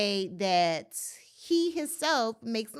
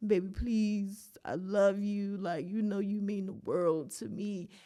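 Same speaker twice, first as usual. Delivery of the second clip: fake tearless crying with pleading tone; 4 semitones lower, 4 dB quieter than usual. Retelling a man's plea in a posted video: imitating fake crying plea. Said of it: "crying on video".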